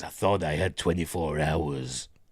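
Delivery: clumsy, unconvincing, put-on deep movie voice. Retelling what he says, in a Kurt Russell impression. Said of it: "That's not a good impression of Kurt Russell, I know".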